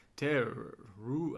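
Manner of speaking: warbly, wavering ghost voice. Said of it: "a warbly voice, like a ghost".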